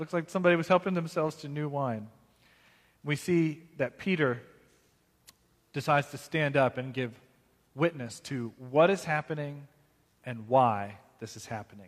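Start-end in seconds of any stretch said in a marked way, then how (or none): none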